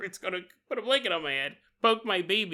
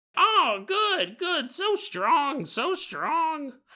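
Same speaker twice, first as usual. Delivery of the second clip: pitched up, every word dragged out; 8 semitones higher than usual. Telling a story, voicing Big Bird praising someone's strength: worst Big Bird impression. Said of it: "This is the worst impression ever you've ever done".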